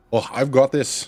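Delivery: put-on Scottish accent. Voicing a character just slashed by a bear, replying in an accidental Scottish accent. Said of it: "That was like Scottish".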